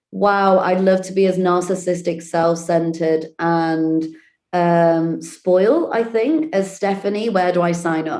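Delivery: ordinary talk, nothing marked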